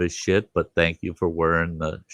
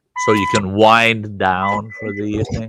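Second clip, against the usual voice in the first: plain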